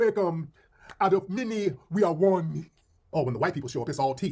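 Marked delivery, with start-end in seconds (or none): 0.0-2.7 very slow, drawn-out, put-on Jamaican accent. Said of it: "y'all throw that accent?".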